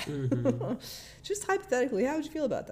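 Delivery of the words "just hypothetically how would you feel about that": put-on bright, cheery, chipper voice, very high. Retelling a man asking a group a hypothetical question, imitating a chipper voice. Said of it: "speaking in this kind of chipper voice".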